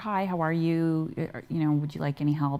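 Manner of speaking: ordinary delivery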